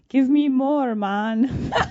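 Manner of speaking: loud, drawn-out, bad Jamaican accent, man's voice. Speaker retells what he called out, in a terrible jamaican accent. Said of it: "calling out in a terrible Jamaican accent".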